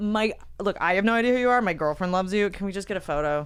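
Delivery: plain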